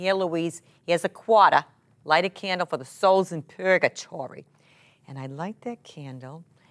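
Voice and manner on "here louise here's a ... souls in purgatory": put-on thick, heavy, laid-on Boston accent. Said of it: "her thick Boston accent".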